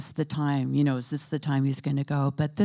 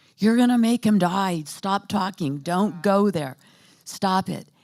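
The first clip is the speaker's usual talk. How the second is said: mock-alarmed, frantic, freaked-out yelling; 4 semitones higher, 3 dB louder than usual. Speaker recounts their mom in the corner yelling at them, retelling mom's yelling. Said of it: "She starts yelling at me like".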